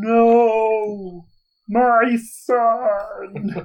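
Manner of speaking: very high, drawn-out slow-motion movie yell. Voicing a character who sees an ally dying: slow-motion yell. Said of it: "I'm gonna yell, like, in super slow motion, like Matrix".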